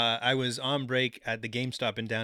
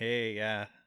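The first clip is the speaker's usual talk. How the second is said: put-on unimpressed tone; 3 dB quieter than usual. Retelling a band member's reply after being yelled at: imitating an unimpressed reply. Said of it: "really unimpressed".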